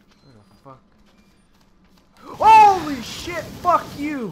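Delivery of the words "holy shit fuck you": high, shrill, very loud, drawn-out startled scream. A gamer spots a creature crawling on the ceiling: screaming. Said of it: "I didn't mean to scream".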